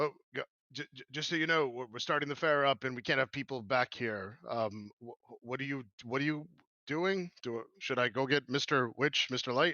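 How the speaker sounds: monster character voice of a bugbear. Voicing a bugbear who comes back to the group at the fair: bugbear character voice. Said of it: "he comes back to you guys and, and he says".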